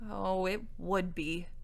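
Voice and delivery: deeply disgusted. The king's daughter answers the knight about the rescue reward: deep disgust. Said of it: "Simmering said in tones of deep disgust".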